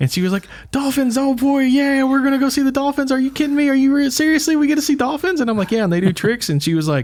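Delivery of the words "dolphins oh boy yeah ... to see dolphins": play-acted thrilled, very high-pitched excited squealing and gushing. Telling of hurrying her to a dolphin show, imitating her excited happiness. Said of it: "she got so excited and she was so happy".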